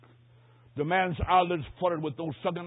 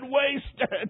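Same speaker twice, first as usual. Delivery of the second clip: word said through a mock sob; 8 semitones higher than usual. Retelling a dying man falling back in bed: imitating sobbing speech. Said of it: "Then he sobbed and said".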